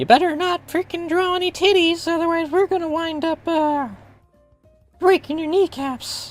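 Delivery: squeaky voice, pitched very high. Complaining about PayPal, voicing the company's warning, Mickey Mouse voice. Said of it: "I put on the Mickey Mouse voice for that".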